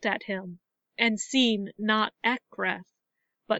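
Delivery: ordinary delivery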